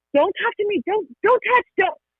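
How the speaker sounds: frantic, freaked-out yelling, very high-pitched, rushed. Acting out an upset caregiver reacting to a child: imitating a parent yelling in a panic. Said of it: "they yell".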